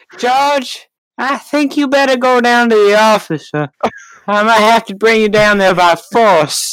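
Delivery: high, slow, lingering, creepy drawl. Retelling a science teacher sending George to the office, Family Guy pedophile voice. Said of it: "Why do you sound like the pedophile from Family Guy?".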